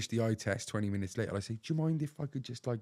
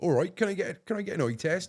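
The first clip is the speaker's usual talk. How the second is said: loud, high, casual put-on West Country accent; 8 semitones higher, 5 dB louder than usual. Retelling asking for an eye test in shops, West Country accent. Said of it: "West Country and all that".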